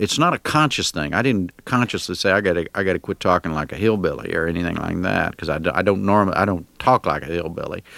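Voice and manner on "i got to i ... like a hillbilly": normal talking voice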